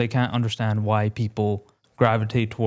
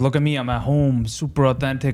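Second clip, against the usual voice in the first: mock newsman voice, fake casual tone; 2 semitones higher than usual. Mocking a news guy pretending to be on a podcast: imitating a news guy acting casual. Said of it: "a news guy pretending to be on a podcast".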